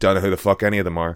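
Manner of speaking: loud, quick, expressionless deadpan. Retelling a fellow cast member's reply about the other cast, mock-deadpan.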